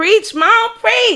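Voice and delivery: very high-pitched street-style hype cheering.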